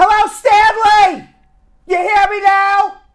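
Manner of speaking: screaming, very loud, shrill and high-pitched. Calling out to Stanley, who complains the volume is too low, screaming. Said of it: "I'm screaming my head off for you".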